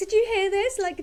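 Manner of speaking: high, laughing, gushing flirty voice. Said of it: "like, grossly flirting".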